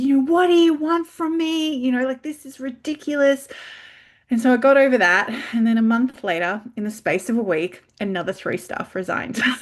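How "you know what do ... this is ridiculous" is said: furious, high-pitched, angry yell. Retelling being so angry at three more resignations: retelling yelling at the universe. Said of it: "yelling at the universe".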